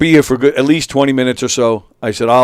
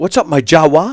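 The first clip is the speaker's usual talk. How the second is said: put-on urban street slang, stress leaning on "-wa"; 3 semitones higher than usual. Speaker tries out a greeting and urbans it up; put-on urban voice. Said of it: "I'm gonna try and you know urban it up".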